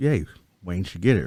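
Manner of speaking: plain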